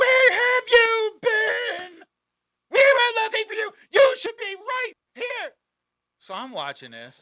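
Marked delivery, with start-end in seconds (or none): 0.0-5.5 shrill, very loud, very high yell. Retelling how a lady at a bar yelled at a man: imitating a lady yelling. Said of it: "the lady starts yelling at him".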